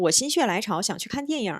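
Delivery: fast, everyday, at natural speed. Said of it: "빠르게 말하면".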